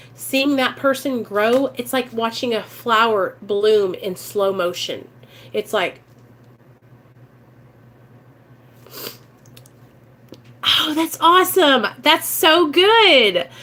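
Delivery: talking through excited, choked-up tears. Addressing the audience as 'you guys', the speaker is crying, choked up. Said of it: "sorry, I'm crying because I get so excited".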